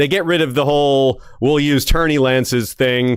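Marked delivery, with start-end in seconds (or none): none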